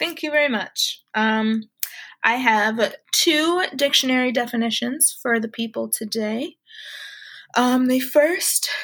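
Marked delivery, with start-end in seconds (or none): 7.6-8.7 speaking mid-yawn. Host introducing the first of two dictionary definitions, yawning. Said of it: "I'm yawning".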